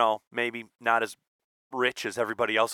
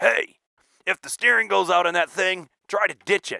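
loud, pitched-up hollering yell; 8 semitones higher, 5 dB louder than usual. Retelling what the old man yelled on the way out: imitating dad yelling. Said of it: "he yells at me".

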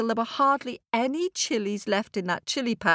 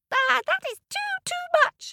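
very high, squeaky little ant voice. Reading a fable aloud, the ant answers the boy, squeaking. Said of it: "squeaked the ant".

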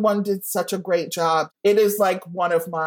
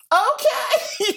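very high, laughing, startled, awkward, polite squeak. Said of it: "And I was like".

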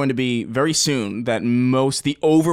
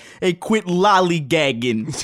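put-on raised, strong, parody-like New York accent; 5 semitones higher than usual. Retelling what a military friend's buddy said: imitating a New York accent. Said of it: "he sounds, like, really New York".

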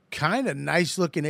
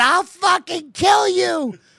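very high, very slow, shrill, menacing woman's voice; 8 dB louder than usual. Retelling what a woman on the subway yelled: imitating a woman threatening. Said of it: "She went".

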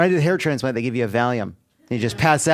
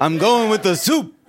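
very high put-on old man voice with accent; 9 semitones higher, 3 dB louder than usual.

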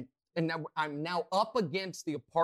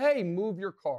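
play-acted, loud called-out shout; 3 semitones higher, 4 dB louder than usual. Retelling shouting at a woman whose car blocks the complex exit: retelling a shout. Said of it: "So I shout".

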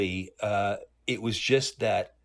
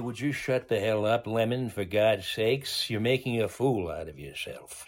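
put-on gruff comedic voice. Retelling what Walter said to his father: Walter Matthau impression. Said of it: "and then Walter would look at him and say".

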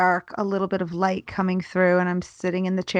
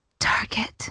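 put-on tiny, soft whisper in a child's voice. Retelling a little girl's reply: imitating a child whispering. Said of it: "she whispered back to me".

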